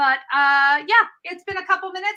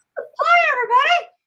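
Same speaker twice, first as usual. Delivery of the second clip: squeaky, very high puppet voice; 12 semitones higher, 4 dB louder than usual. Greeting everybody after switching phone things around, sounding like a puppet. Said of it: "suddenly you talk like a puppet".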